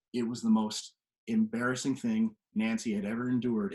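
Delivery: ordinary talk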